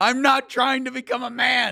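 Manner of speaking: very high, very loud, enraged, furious shriek. Retelling a news story about a furious client: imitating an angry scream. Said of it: "she screamed out in anger".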